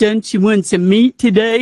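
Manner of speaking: put-on slurred speech. Remembering a grinning, smelly butcher from town: imitating his slurred speech. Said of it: "slur by saying".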